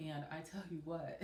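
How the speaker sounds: plain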